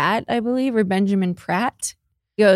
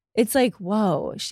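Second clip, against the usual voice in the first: usual speaking voice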